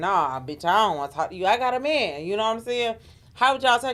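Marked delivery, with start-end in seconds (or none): 0.0-2.3 rude, dismissive tone full of attitude. Imitating how she could say it, putting on an attitude. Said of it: "She could say it like in an attitude kind of way".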